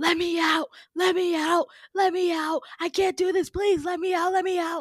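mock frantic shrieking, very high and loud. Retelling a story, the speaker imitates a man screaming at the top of his lungs. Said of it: "screaming at the top of his lungs".

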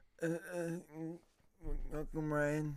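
fake drunk speech. Welcoming a guest back to the podcast: pretending to be drunk. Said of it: "That's me being drunk".

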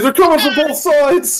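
very high-pitched, panicked, freaking-out voice. Voicing a man panicking as the room is broken into: panicked NPC voice. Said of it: "This man is just freaking the heck out".

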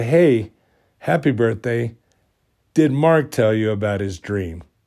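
plain

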